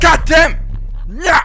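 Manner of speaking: startled, furious yelling, high and very loud, shocked.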